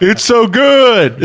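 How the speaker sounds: very high, slow mocking moan.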